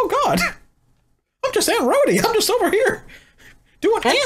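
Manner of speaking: very high, squeaky cartoon voice. Playing Aunt Rhodey in a group role-play scene: Aunt Rhodey voice, Mickey Mouse-like. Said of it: "Rhodey sounds like Mickey Mouse".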